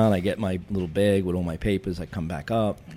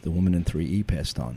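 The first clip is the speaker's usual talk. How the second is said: acted, kind, sympathetic, compassionate tone. Retelling answering an elderly woman's question as an officer, speaker uses his compassionate voice. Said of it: "back with the compassionate voice".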